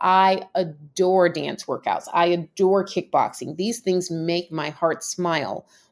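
ordinary talk, nothing marked

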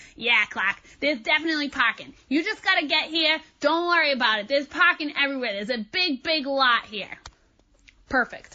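put-on heaviest possible Boston accent. Quoting the coach's reply to the speaker, in a strong boston accent. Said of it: "in the most Boston accent ever".

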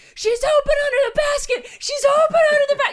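very high, loud, excited yell. Retelling a parent yelling during a basketball game: imitating dad screaming. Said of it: "you can hear my dad screaming".

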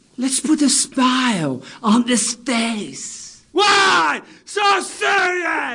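high, drawn-out villain-style shout. Auditioning on tape for a part: Joker voice. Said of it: "Let me introduce you to the new Joker".

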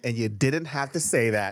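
ordinary talk, nothing marked

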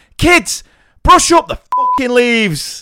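very high, shrill, loud, full-voiced yell. Retelling how a girl from your reception class shouted to the children, retelling a loud shout. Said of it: "in a loudest voice shouted".

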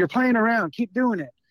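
mock yelling, high-pitched, scolding scream. Retelling a grandma screaming at her grandchild in a waiting room: imitating someone screaming. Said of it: "she screams again".

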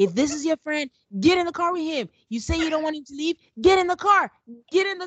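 high, shrill, loud yelling. Retelling how Michaela turned on a friend, imitating her yelling at him. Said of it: "Starts yelling at Ryan".

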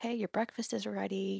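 soft and quiet. Imitating a woman staying at the house waking everyone for breakfast, very quiet. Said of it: "like very quietly".

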